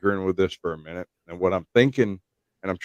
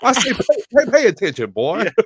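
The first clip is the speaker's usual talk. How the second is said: blustery Southern voice, much higher pitched; 4 dB louder than usual. Trying out a suggested catchphrase: Foghorn Leghorn preacher voice. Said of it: "Southern Baptist minister mixed with foghorn leghorn".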